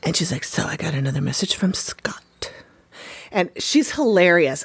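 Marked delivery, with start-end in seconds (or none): 0.4-2.2 breathy, confiding whisper spoken close to the listener. Imitating an author who talks into the camera: imitating someone whispering. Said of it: "she's whispering to you".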